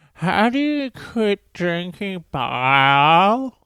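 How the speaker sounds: very high, slow voice with a name drawn out. Retelling a fellow comedian asking how to quit drinking: imitating Karen's voice. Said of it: "That's her fucking voice".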